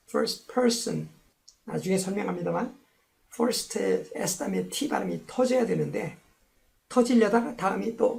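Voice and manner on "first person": person stressed more strongly than first. English lesson on first modifying person, stress on person. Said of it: "first보다는 person에 더 큰 그래 person의 이름절 강세가 있어서".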